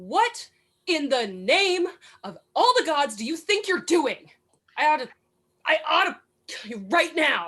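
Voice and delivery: furious, threatening angry outburst. In a tabletop roleplay, a character shoves another against the wall, angry. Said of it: "going to glower at you angrily".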